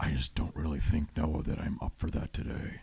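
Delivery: weird gravelly put-on voice. Retelling what a man said when asked for an interview: imitating Justin's weird gravelly voice. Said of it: "He talked in a weird, gravelly, like, voice".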